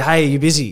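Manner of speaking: ordinary talk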